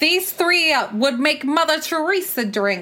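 imitated New Jersey accent. Quoting what someone being discussed says, in a new jersey accent. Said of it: "your New Jersey accent there".

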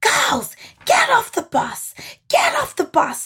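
high, slow, urgent shout in put-on woman's voice. Retelling a woman ordering the girls off the bus: imitating a woman shouting. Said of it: "she's like shouting at us".

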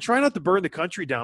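ordinary talk, nothing marked

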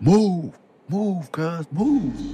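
play-acted very high, very slow, drawn-out scream. Telling of feeling crowded by people in la, retelling a scream. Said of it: "so I just start screaming".

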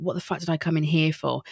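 normal talking voice

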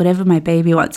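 put-on whisper. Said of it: "whisper into her ear".

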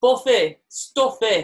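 high, loud, broad northern Barnsley accent. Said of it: "was there any other words?".

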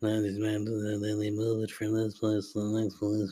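put-on, droning monotone. A podcast host mocks his own boring explanation, droning like the Ferris Bueller teacher. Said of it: "I feel like the fucking teacher".

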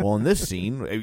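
normal talking voice

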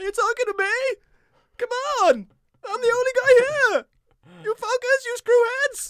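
very high, loud, belted tough-guy ranting voice. Performing a promised impression of a comedian playing a movie character: Jerry Seinfeld playing Travis Bickle. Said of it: "perform my latest impression, Jerry Seinfeld playing Travis Bickle".

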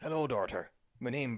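bad put-on Scottish accent. Giving a brief overview of a film, bad Gerard Butler Scottish impression. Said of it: "That was so bad".

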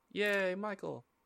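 soft, high, unenthused cheer with no excitement. Thanking a listener named Michael on the show, unenthused. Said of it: "you did not sound enthused".

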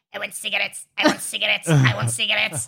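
cat voice, rough and creaky. Describing the voices given to their cats, doing Norm's cat voice. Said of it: "Norm's cat voice".

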